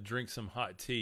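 ordinary talk

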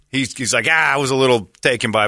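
ordinary talk

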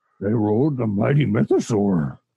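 puppet-like, wise little sage creature voice. Quoting a character from the show, in a Yoda-like voice. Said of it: "It was more Yoda than Ugnulty".

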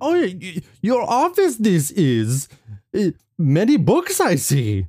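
put-on old-creature voice. Improv scene, a character visiting someone's office, in a Yoda voice.

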